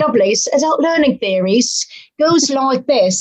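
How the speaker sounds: horrible, clumsy fake British accent. A show host, mentioning show notes, switches to a horrible British accent. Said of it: "my horrible British accent".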